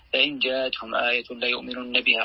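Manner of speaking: plain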